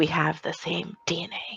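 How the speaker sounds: hushed whisper, very quiet. In character, whispering to Sammy while following Alex out. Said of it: "I'm going to whisper to Sammy".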